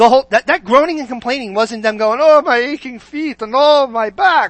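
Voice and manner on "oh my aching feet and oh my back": put-on Yiddish-inflected voice.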